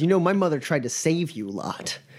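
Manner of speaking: spoken through gritted, clenched teeth. Voicing a character in a scene, addressing Lot, through gritted teeth. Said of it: "He grits his teeth and he goes".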